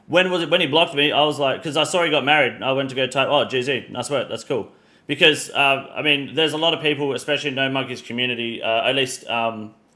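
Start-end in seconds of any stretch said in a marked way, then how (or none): none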